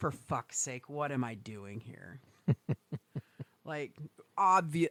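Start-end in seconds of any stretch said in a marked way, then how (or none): 0.0-2.2 play-acted, very low, quiet, fed-up exasperated grumble. Imagining the listener's reaction while baking, sounding mock-exasperated. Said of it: "I could just hear the exasperation in your voice".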